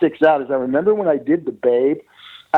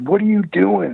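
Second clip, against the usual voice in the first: mock scolding, screaming; 6 semitones higher than usual. Retelling how the publicist came running over: imitating someone screaming. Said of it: "he's screaming at me".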